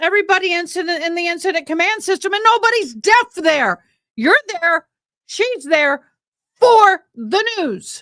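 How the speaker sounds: yelling in anger. Complaining that the interpreter keeps getting cut off: yelling in anger. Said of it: "I'm yelling 'cause I'm damn tired of it".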